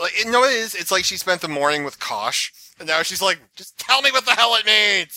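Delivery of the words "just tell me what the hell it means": mock crotchety, fed-up outburst, loud and high. Retelling what a character seems to be thinking, imitating a cranky outburst. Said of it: "she's cranky".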